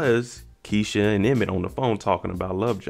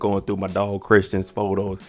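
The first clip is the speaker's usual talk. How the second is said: plain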